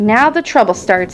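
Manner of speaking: plain reading voice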